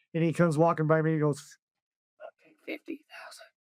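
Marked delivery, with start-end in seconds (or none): 2.6-3.4 very quiet, hushed whisper right at the ear. Speaker retells a man walking by and speaking into his ear, imitating a whisper. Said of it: "Whispers it to me in my ear".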